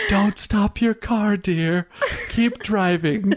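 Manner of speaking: whispering put-on character voice. Speaking to listeners through the podcast as Grandmother Willow, whispering. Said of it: "Grandmother Willow is whispering to you".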